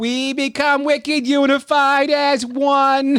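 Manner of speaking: put-on very high, slow priest voice with Boston accent. Joking how a priest from Boston would read it: Boston priest voice. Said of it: "If it was a Boston priest".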